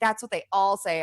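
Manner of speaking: plain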